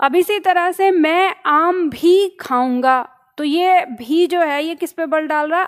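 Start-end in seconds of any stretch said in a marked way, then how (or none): 0.9-3.1 आम भी stressed, said slowly. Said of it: "आम पे".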